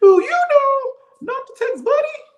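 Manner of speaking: cartoon voice cranked up very high and loud. Talking to Martell about texting, in Shrek Gingerbread Man voice. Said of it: "I have to talk to him in the gingerbread voice off of off of Shrek".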